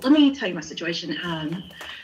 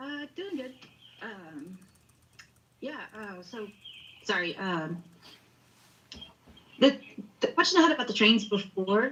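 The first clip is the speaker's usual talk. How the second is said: anxious, nervous, stop-start, halting ramble; 2 semitones higher, 5 dB quieter than usual. A caller on a livestream greets the host and starts asking a question: nervous, hesitant. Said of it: "I'm just nervous".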